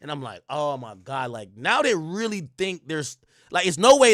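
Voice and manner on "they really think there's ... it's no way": normal talking voice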